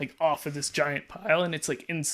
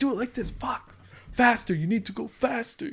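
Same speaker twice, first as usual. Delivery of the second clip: furious, high-pitched screaming; 8 semitones higher than usual. Retelling a boss's orders while strapping a load: imitating a boss screaming. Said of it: "with somebody screaming at me like that".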